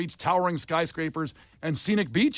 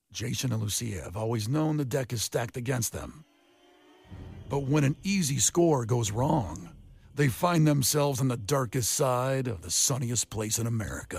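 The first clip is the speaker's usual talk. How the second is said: movie trailer narrator voice, lower; 4 semitones lower than usual. After warming up, reading a trailer synopsis aloud, movie trailer voice. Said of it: "the movie trailer voice".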